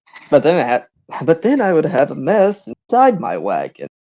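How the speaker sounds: sleepy, half-awake, drowsy, lazy grumble. A merchant answers the person talking to him, drowsy and lazy. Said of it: "yeah, the merchant just kind of lazily turns to you, like he's, he's his eyes are half lit. It looks like he's about to fall asleep any second. / yeah, the merchant just kind of lazily turns to you, l".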